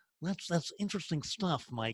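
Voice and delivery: very soft, murmured TV newscaster-style voice. Acting out a critical inner voice: Johnny Carson voice. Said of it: "like a Johnny Carson".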